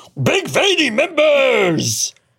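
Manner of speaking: very high-pitched puppet-show character voice. Joking with co-hosts, one asks why he sounds like a Muppet; Muppet-like voice. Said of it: "Why do you sound like a Muppet?".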